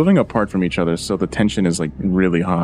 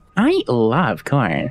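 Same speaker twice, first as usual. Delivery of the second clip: funny female text-to-speech app narrator voice; 3 semitones higher than usual. Agreeing on a TikTok sound, imitating default TikTok female voice. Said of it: "the default".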